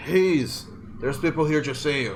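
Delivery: calling out, voice projected to carry a distance. Voicing a character calling for someone inside: screaming. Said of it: "he just screams".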